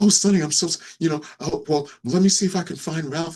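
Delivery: play-acted, excited, worked-up chatter. Retelling how Kathy reacted to his fooling around; imitating Kathy getting worked up. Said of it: "got all worked up".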